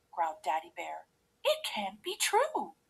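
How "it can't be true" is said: very high, soft, gasped-out voice. The mother bear, told a girl is still in the bed, gasping. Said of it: "gasped Mommy Bear".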